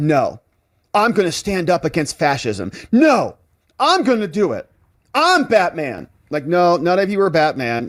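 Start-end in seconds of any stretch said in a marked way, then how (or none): 0.0-6.1 scornful, taunting, caricatured delivery. Mocking people who help a defendant escape, imitating them: mocking imitation of virtue signalers. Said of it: "virtue signalers that are like".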